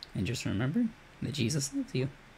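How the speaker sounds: high-pitched voice breaking mid-line. A streamer ending an outro to viewers, voice cracking. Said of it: "I don't know why my voice cracked there".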